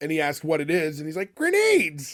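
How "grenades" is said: very high, shouted exclamation. Retelling a movie scene, doing a spot-on Uncle Fester impression. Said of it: "a spot-on impression".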